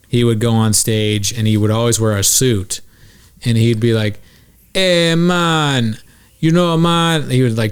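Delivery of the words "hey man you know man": very slow, drawn-out put-on Jamaican lilt. Retelling how a stage performer who pretended to be Jamaican talked: imitating Adelson Fitzgerald Holder's fake Jamaican accent. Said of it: "pretended to be Jamaican".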